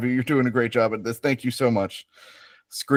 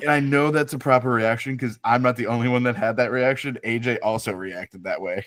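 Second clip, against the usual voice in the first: ordinary talk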